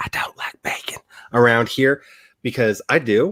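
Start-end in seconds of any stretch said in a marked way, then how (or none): 0.0-1.0 secretive, hushed, barely voiced whisper. Wary of saying it out loud around here, whispering this part. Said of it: "I'm gonna have to whisper this".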